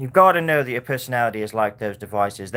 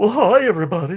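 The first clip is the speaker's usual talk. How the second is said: high character voice with heavy, thick breathiness; 8 semitones higher, 4 dB louder than usual. Doing a voice the speaker has been trying lately, Harry Caray voice. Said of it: "I've been doing this voice lately, like the Harry Carey".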